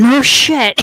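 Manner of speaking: loud in-character shouting. Answering a call for help over a zombie horde: in-character yell. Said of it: "I'm just gonna yell over the horde".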